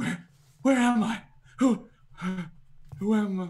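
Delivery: shaking voice. Narrating a story, voicing a woman who looks up at the listener, trembling. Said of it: "She's kind of like trembling and looks up at you".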